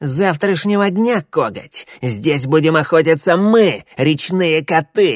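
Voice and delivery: words spat out as a hiss. Reading a story where a defeated brown cat answers his captor; hissing. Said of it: "прошипел в ответ поверженный коричневый кот".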